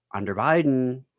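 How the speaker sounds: ordinary talk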